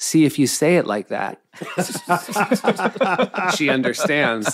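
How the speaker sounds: high, laughing, dripping condescension.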